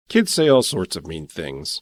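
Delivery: plain reading voice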